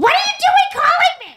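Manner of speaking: mock shout, pitched high.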